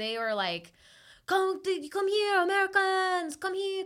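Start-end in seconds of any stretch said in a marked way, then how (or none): 1.3-3.8 put-on Italian accent, much higher. Describing people at the airport calling out to americans, in a put-on italian accent. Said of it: "I made them sound Italian".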